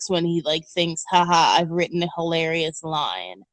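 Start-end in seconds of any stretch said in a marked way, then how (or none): 1.1-3.3 smug, self-satisfied, thrilled with itself. Mocking how a comedian smirks at his own joke: smug Adam Sandler voice. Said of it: "smugly smirks".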